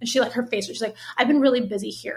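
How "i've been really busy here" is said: snippy, defensive tone. Retelling a coworker's answer to a friendly question: imitating a defensive, snippy reply. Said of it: "And how she said it".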